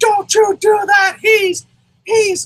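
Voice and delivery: high, slow, loud woman's scream.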